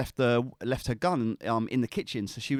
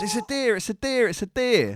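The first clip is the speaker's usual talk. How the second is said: put-on police officer voice, high, raised shouting; 9 semitones higher, 5 dB louder than usual. Retelling armed officers coming face to face with a frightened deer, retelling an officer's shout. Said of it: "An officer shouts".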